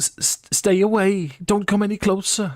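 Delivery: female elvish voice. Voicing an elf woman warning the group to stay away, in a female elvish accent. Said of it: "a female elvish voice ... similar to the uh, Dimonesti accents".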